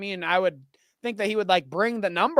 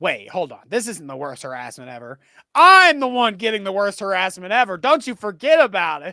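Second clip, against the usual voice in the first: loud, taunting, ridiculing, derisive voice; 7 dB louder than usual. Mocking a colleague's complaint about harassment: imitating him mockingly. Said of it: "He's like".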